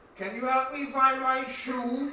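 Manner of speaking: put-on loud decrepit old man voice. Voicing an old man asking the group for his shoe: Larry, old decrepit man. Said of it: "He's old and decrepit".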